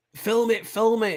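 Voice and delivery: high, drawn-out, urgent scream. Retelling seeing a plane frozen in the sky: imitating a mum screaming. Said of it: "my mum was screaming".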